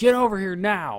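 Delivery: shouted, high, urgent yell. In a tabletop game, a player voices their character turning back: yelling. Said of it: "and I'm like yelling".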